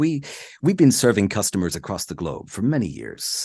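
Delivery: put-on light British accent. Speaker imitating Jason Palmer's ad read for The Economist, in a light British accent. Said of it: "he's kind of British".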